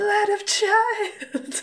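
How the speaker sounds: very high, piercing, shrill screaming screech. Describing a scene, the speaker acts out Sparkle Puff screaming. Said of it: "he starts screaming".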